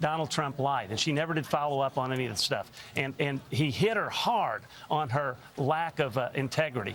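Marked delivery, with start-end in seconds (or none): none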